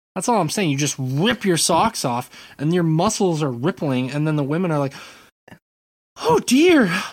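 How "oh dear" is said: very high, loud, awestruck swooning exclaim. Acting out how the women react, imitating an awed woman. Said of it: "That was a really great impression of a woman in awe".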